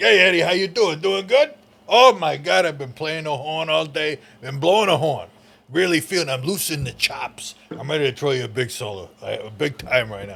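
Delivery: showy, hyped-up bandleader character voice. On a podcast, the speaker shows how his band leader character sounds: band leader character voice. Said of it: "sounds a little bit like".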